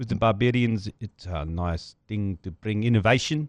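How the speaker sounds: put-on thick Afrikaans accent. Reading out Rassie's quote as asked: Rassie thick Afrikaans accent. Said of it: "can you do the accent, please?".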